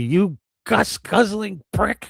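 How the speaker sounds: high-pitched, slow, mocking yell.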